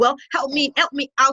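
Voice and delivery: ordinary delivery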